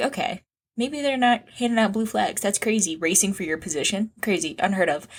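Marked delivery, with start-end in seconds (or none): none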